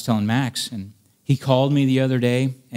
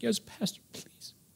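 put-on hushed, tearful, pleading whisper; 11 semitones higher, 14 dB quieter than usual. Retelling a phone call where a man begs the pastor to come: imitating someone crying. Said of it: "And he's crying".

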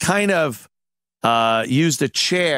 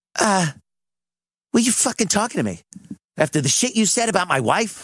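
put-on contemptuous, scornful, pitched-up voice; 7 semitones higher than usual. Retelling what a man said to someone, imitating a disdainful voice. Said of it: "just disdain in his voice".

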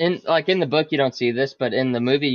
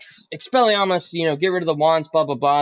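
ordinary talk

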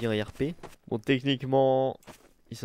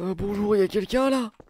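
raised, pitched-up attempted old man voice; 9 semitones higher, 5 dB louder than usual. Roleplaying, calling out on arriving at the foundation, in an attempted old man voice. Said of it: "je sais pas faire la voix du vieux".

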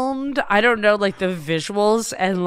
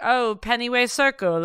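mocking a put-on British accent; 3 semitones higher than usual. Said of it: "you spoke in a British accent".

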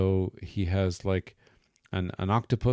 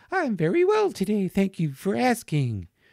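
very high, swooping put-on American puppet voice; 12 semitones higher than usual. Showing how a puppet leader might voice a fox: slightly higher-pitched American voice. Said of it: "a slightly higher version of her American voice".

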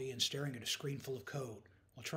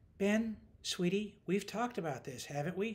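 patient, motherly tone, pitched higher; 6 semitones higher than usual. Danni speaks to Ben, who showed up uninvited, patient. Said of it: "She asked patiently".

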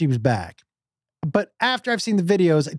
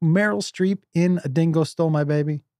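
plain

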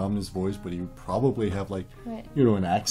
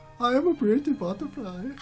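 put-on German accent, much higher pitch; 14 semitones higher than usual. During a game of pretend, a player speaks in a German accent. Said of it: "You guys got like a German accent".

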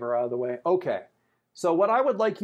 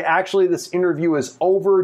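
ordinary delivery

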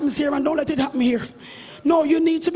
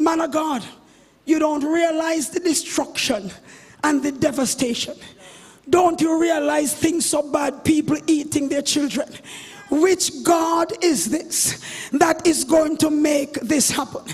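plain

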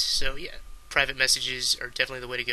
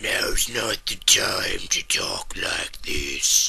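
deep, very low, rough, sinister villain voice; 7 semitones lower, 3 dB louder than usual. Demonstrating a range of voices one after another, in a deep, evil voice. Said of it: "I sound very deep or evil".

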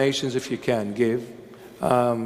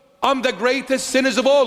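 very high, loud, full-voiced delivery; 12 semitones higher, 4 dB louder than usual. Confessing before the listeners to being the greatest sinner: saying it loudly. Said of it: "I say it with a loud voice".

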